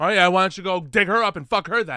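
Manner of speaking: loud, high-pitched, scornful mocking voice. Imitating the kind of thing the ex-wife would say: imitating the ex-wife's retort. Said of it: "is the kind of thing she'd say".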